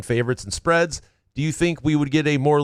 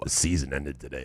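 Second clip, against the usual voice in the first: put-on radio announcer voice, much lower; 12 semitones lower, 10 dB quieter than usual. Talking about playoff odds, the speaker demonstrates the line in a radio announcer voice. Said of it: "That was my radio guy voice".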